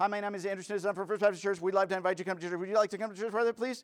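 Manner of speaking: high, loud, over-the-top delivery.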